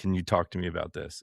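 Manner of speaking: ordinary delivery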